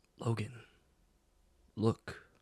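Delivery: very faint voice. Narrating the scene, a voice calls to Logan again, very faint voice. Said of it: "Still very faint".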